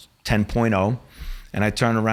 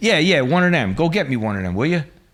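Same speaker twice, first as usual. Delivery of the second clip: play-acted, high, obnoxious, demanding, rude tone; 5 semitones higher, 3 dB louder than usual. Retelling an undercover act ordering a waitress around: imitating a rude scumbag tone. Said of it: "I sound like a complete scumbag talking to this girl like this".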